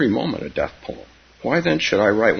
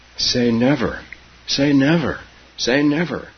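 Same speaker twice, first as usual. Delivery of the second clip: gasping out the words, breathless, higher pitch; 5 semitones higher than usual. A girl on her grandmother's knees, kissing her, gasping between kisses. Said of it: "she gasped between the kisses".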